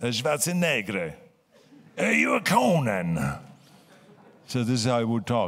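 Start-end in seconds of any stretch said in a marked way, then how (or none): 0.0-3.2 put-on swooping, wide-swinging Italian accent. Recalling the film's producer addressing him, Dino De Laurentiis Italian accent. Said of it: "he had this Italian accent".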